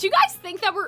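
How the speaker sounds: voice breaking into a crack. Asking the audience a question about the story, voice cracking. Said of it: "the voice crack".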